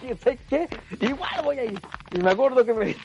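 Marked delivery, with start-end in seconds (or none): 0.2-1.8 cross, defiant, angry, pitched-up retort. Retelling a reply to mother after she backed down, imitating own angry words. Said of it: "Y yo de puro enojado dije".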